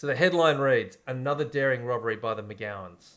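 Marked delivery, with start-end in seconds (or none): none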